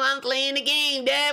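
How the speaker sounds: put-on childlike little kid voice. Describing a man who does two voices, speaker demonstrates his little kid voice. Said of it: "And then he got his little kid voice".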